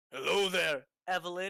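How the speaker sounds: very loud, powerful, commanding, booming put-on voice. Player describing a kenku greeting Evelyn, mimicking Evelyn's voice. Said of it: "in her voice".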